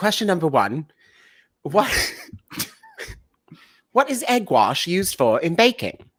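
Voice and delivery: put-on British accent. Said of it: "My British accent is so bad".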